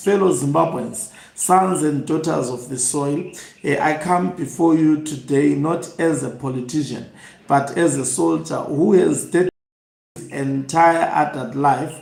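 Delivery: ordinary talk, nothing marked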